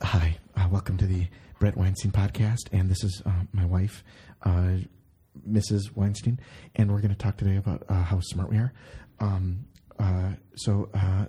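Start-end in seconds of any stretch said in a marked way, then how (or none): 0.0-8.7 mocking, whispered podcast voice, lower pitch. Mocking a podcast by imitating its host: imitating Brett Weinstein whispering. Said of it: "whisper into the microphone like that the whole time".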